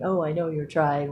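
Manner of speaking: put-on sarcastic tone. Retell what she used to say whenever you told her you were trying, imitating her sarcasm. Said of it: "she would do the little sarcastic thing".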